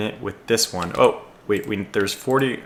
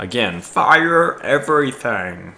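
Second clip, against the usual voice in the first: loud, goofy, hammed-up put-on commander voice; 3 semitones higher, 5 dB louder than usual. Speaker issuing commands during commentary, in a silly voice. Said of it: "That's my uh, silly voice".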